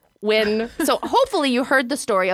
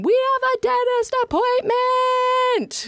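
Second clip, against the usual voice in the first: mock very high, slow, drawn-out holler; 14 semitones higher than usual. Telling how you call to your children from three houses away, acting out yelling. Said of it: "And I'm yelling".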